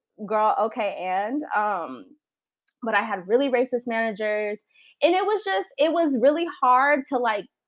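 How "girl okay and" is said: ordinary talk, nothing marked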